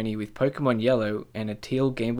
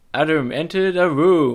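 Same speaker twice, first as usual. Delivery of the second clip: loud, slow video-game battle announcer voice; 5 semitones higher, 8 dB louder than usual. Narrating a friend's life as the game announcer: mock announcer voice. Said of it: "I want him to announce my life".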